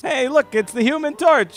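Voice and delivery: put-on excited voice, pitched way up and loud.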